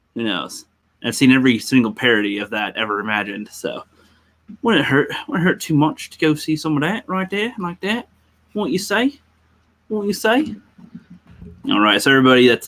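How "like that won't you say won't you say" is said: fake British accent, higher pitch. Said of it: "with, like, a British accent".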